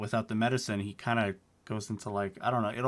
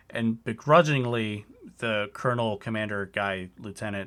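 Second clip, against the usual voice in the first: ordinary talk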